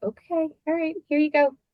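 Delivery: calm, indulgent teacher tone. Retelling how her teacher answered when she asked for her paper back: imitating Mrs. Powers soothing. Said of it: "Silly 4th grade girl who's crying".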